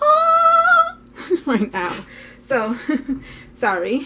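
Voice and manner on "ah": very high, loud, showing-off odd voice yelp. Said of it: "and my voice is".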